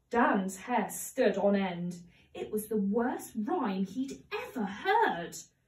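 plain reading voice

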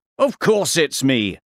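plain

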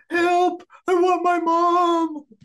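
put-on very high, frightened little child's voice. Voicing a lost child echoing in the darkness: scared child's voice. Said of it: "the scared voice of a child".

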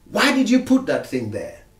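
hard-edged stern voice. A parent reenacting what they say to their child, retelling in a tough voice. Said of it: "in a tough voice".

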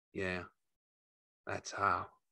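very soft, barely above a half-whisper. George confirms how the killing happened, his voice almost a half-whisper. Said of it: "George's voice was almost a whisper".

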